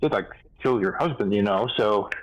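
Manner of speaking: ordinary talk, nothing marked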